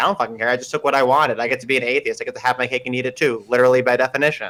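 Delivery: plain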